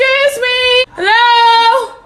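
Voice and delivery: very loud, high, drawn-out screaming. Locked inside a bank, retelling calling out for anyone there, retelling a scream. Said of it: "screaming like".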